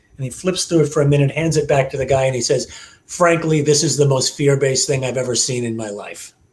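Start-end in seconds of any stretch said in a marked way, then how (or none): 3.1-6.3 very deep, bone-dry, flat, low-key delivery. Retelling what Steve said after flipping through something and handing it back; Steve's very deep voice. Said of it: "got a very deep voice".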